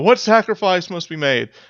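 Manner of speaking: high-pitched pleading. Voicing an acolyte begging an angry god: begging. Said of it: "she's begging".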